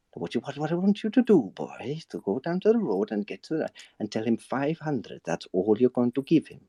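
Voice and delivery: put-on slow, controlled Welsh accent. Speaker imitates Tom Hardy's Welsh accent in Locke, at a very controlled pace. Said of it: "Tom Hardy doing a Welsh accent at a very controlled pace".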